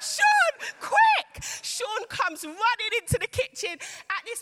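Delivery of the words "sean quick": very high, shrill, loud scream. Retelling falling back from a kitchen fire, retelling a scream. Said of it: "I'm literally screaming".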